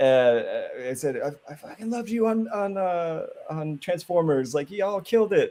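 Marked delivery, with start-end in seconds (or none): 1.2-5.5 yelling in a very high voice. Retelling yelling compliments at an actor on set: imitating himself yelling compliments. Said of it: "but I'm, I'm yelling this".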